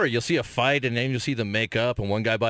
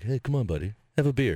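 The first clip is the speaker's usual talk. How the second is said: put-on whispering. Imitating the city tempting someone to drink: imitating a whisper. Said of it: "the whole city all the time is just whispering".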